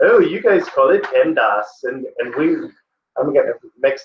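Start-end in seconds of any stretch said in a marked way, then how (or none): 0.0-1.7 comic, funny put-on English accent. Speaker quotes a tutor from England: put-on funny English accent. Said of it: "she has this funny English accent".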